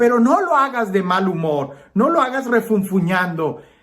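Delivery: mock, put-on scolding and yelling. Retelling how the mother scolded grudging chores: imitating mother yelling. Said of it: "mi mamá me gritaba y me decía".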